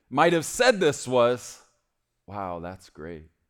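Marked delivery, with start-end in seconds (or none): 2.2-3.2 sounding bored and completely uninterested. Speaker showing how people read King David's words in the Bible, in a bored delivery. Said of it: "We read it like it was boring".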